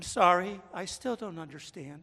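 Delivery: sugary, syrupy automated digital assistant voice. Retelling how a digital voice answers his questions, in its sweet, syrupy voice. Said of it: "answers me in a sweet, syrupy voice".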